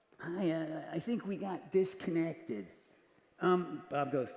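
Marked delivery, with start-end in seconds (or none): 0.2-2.7 put-on laid-back rocker voice, quieter. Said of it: "it's a really good and Petty impression".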